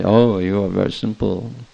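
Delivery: teasing, mocking, sarcastic tone. Recalling how he joked in a sarcastic way: mock-sarcastic. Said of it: "Joking in a sarcastic way".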